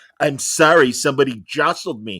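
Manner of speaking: classic nerdy comic-book-store guy voice. Retelling a story, the speaker quotes the splashed guy's apology in a classic comic book store nerd voice. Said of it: "in a classic comic book store nerd voice goes".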